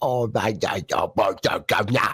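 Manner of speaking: trashy put-on British accent. Imitating a friend voicing an angry dating-sim girl: bad american fake british accent. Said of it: "that super American trash British accent that you do".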